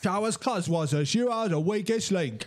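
put-on Australian accent. The speaker stops and tries the line again in an australian accent. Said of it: "Australian accent".

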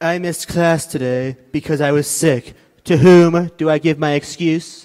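very loud, booming read, close to the mic. Asked to read student messages like Donald Trump: Donald Trump impression. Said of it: "read them like Donald Trump".

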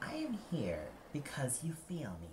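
quiet, soft-spoken, understated, simply spoken. A haunting figure on the shore answers the composer's question; said quietly. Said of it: "Grief said quietly".

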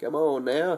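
put-on hillbilly-style country accent. A youtuber hurrying viewers over to the channel, in a hillbilly accent. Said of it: "I gotta talk like a hillbilly".

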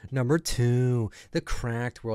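mocking, imitated delivery. Mocking how the narrator says a list entry: mocking imitation of the narrator. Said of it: "stop talking like that".

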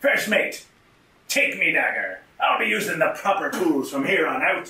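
pirate-style talk. Playing a pirate who hands his dagger to the first mate: pirate voice. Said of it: "I am to be a pirate [name]".

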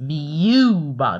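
v of "view" stressed. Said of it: "put so much emphasis on the V".

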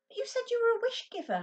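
very loud, high-pitched, argumentative. A boy refused a wish protests to the wish-giver, arguing. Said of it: "Ben argued".

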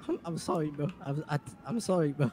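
scared, frightened, stumbling, stammering voice. Apologizing after being threatened: acting scared. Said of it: "You scared me".

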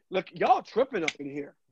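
usual speaking voice

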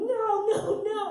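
loud high-pitched yell. Retelling running from a prostitute chasing you, acting out yelling no. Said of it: "I'm yelling".

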